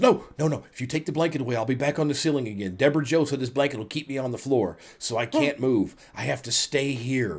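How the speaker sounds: usual speaking voice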